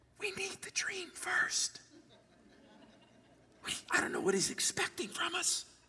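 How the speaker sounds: whispering in a hushed huddle. Retelling how the wise men whispered to one another: imitating whispering wise men. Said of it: "They start whispering to one another".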